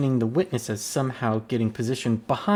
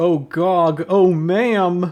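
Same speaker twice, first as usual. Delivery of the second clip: very slow, high, garbled remix-style speech; 6 semitones higher, 8 dB louder than usual. Retelling a remixed video clip line, imitating the YouTube Poop version. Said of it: "the YouTube pro-, poop version where it's like".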